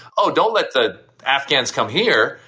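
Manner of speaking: ordinary talk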